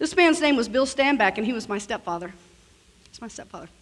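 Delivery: on the verge of tears, choked up, voice breaking. Speaker naming his late stepfather, talking to Jack: about to cry. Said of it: "I'm going to cry".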